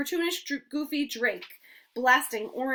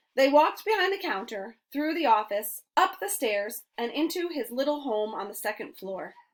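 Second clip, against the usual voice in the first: plain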